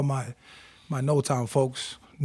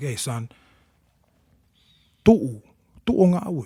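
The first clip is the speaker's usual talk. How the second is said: gentle, calming, soothing fatherly voice, raised; 5 dB louder than usual. Recalling needing his parents, the son imitates his dad's soothing voice. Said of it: "I needed to hear his soothing voice".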